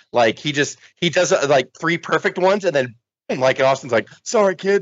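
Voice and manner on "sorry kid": put-on mutter under the breath, higher pitch. Retelling what Steve Austin said after punching a student, muttering under his breath. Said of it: "under his breath".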